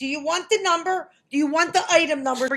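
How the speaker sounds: angry, exasperated, fed-up tone, temper gone. Retelling a phone argument with a store manager: imitating losing her temper. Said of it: "so now I lost it".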